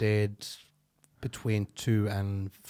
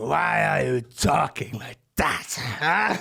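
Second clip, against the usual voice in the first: put-on drunk man's slurred voice, raised and rough; 5 semitones higher, 6 dB louder than usual. Retelling what a drunk man asked the speaker in front of everyone: imitating a drunk man. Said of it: "He was just sitting there drunk".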